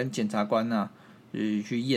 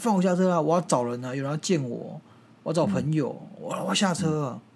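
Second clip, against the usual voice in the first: put-on nagging, fussy old woman voice, pitched up; 5 semitones higher than usual. Retelling how the old woman kept fussing at the bus driver: imitating an old woman pestering loudly. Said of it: "阿婆一直吵".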